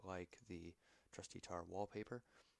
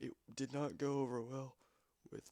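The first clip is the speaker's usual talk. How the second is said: words pushed out mid-yawn, pitched up; 6 semitones higher, 6 dB louder than usual. Just woken up early in the morning, mid-explanation: yawning while talking. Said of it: "I'm yawning".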